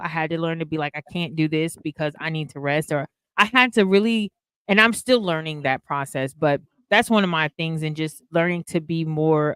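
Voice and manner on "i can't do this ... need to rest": ordinary talk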